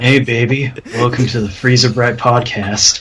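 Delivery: seductive, sexy, come-hither ASMR-style voice. Asked why he sounded sexual saying the podcast name, he repeats it in a sexy ASMR voice. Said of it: "I didn't know this was an ASMR podcast".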